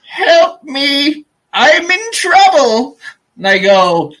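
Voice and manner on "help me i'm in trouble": very high, slow, drawn-out pleading cry. Narrating a story as a mouse hero who suddenly hears a voice: crying out for help. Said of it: "I hear".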